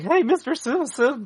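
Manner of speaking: very high-pitched cartoon kid voice. Explaining how a Shaggy attempt would turn out: kid from The Simpsons voice. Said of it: "end up like the kid from The Simpsons".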